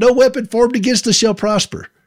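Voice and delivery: high, mild mock yell, church-lady style.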